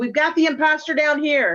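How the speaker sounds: loud screaming. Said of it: "I'm gonna scream up the stairs".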